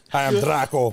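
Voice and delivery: put-on Russian villain accent. Teasing that the name sounds Russian, a friend says the greeting in a Russian boxer-villain accent. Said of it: "you sound like he's gonna fight Rocky".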